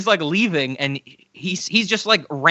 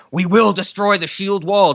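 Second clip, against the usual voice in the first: imitated scream, acted and loud. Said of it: "Hugo Weaving just starts screaming".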